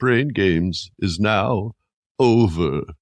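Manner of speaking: gloomy, sad, mournful announcer voice. A host recalls an old HBO show's closing line, imitating sad Brain Games voice. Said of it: "And he sounds so sad".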